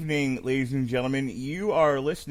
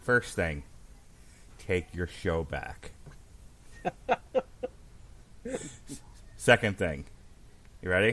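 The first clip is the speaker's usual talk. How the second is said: soft, hushed, secretive whisper; 7 semitones lower, 6 dB quieter than usual. Speaker whispers into the listener's ear so only they hear it, whispering. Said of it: "I'm going to whisper this in your ear".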